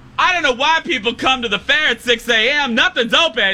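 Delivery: play-acted loudest possible, very high-pitched, shrill voice. Retelling what a woman said after running up to the booth mid-show, imitating a very loud voice. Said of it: "she says in the loudest voice possible".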